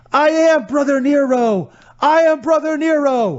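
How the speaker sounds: put-on very high, slow, drawn-out scream. Retelling a match where a wrestler climbs out and starts screaming: imitating a wrestler screaming. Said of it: "and starts screaming".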